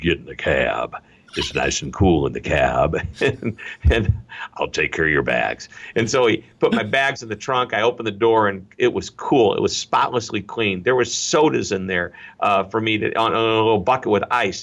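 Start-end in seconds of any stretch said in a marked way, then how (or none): 0.0-5.7 put-on deep Texan accent. Retelling a cab driver's words at pickup, in a deep Texan accent. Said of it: "in this deep Texan accented voice".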